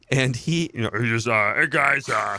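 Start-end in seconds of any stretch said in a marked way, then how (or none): 1.5-2.4 put-on rough, gruff growling monster voice. Showing a friend how Andrew Luck talks, Andrew Luck impression, like Cookie Monster. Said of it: "sounds like the Cookie Monster".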